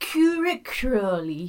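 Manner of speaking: put-on period drama voice. Showing another speaker an impression from Downton Abbey. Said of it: "my impression of Downton Ab-, Downton Abbey".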